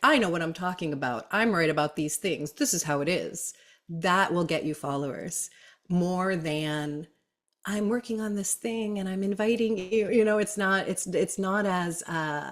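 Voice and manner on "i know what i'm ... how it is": fast, put-on assertive tone of total certainty. Describing social media dynamics, a speaker demonstrates a mask of assertiveness. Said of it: "a mask of assertiveness that there's a tone of voice".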